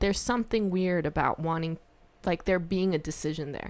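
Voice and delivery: plain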